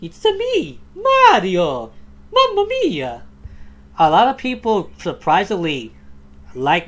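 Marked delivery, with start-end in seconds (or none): 0.0-3.2 very high, swooping, drawn-out cartoon voice. Showing off the voice acting that a bunch of people love, do your Mario impression. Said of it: "love my Mario impression".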